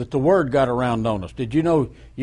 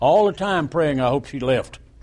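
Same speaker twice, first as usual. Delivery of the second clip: ordinary talk, nothing marked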